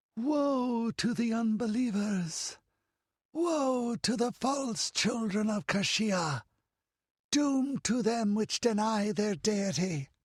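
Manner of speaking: eerie, unhuman, very high, slow voice. Narrator reading a voice calling down from the roof to the priests, weird unhuman voice. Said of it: "That weird, unhuman voice rolled down from the roof".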